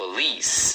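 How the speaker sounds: police with stress on second syllable -lice. Pronunciation lesson explained in Portuguese: stress on lice in police. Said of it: "E a segunda é a mais forte".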